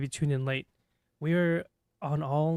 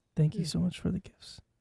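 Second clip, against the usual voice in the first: mock timid, soft, shy ASMR-style voice, higher; 3 semitones higher than usual. Joining in the timid talk, thanking for the gifts: put-on timid ASMR voice. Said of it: "This is getting very A S M R".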